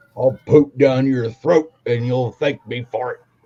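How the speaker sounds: loud, put-on gruff old-timer voice. Speaker puts on a voice to be intimidating, gruff old man voice. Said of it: "kind of an old man gruff voice".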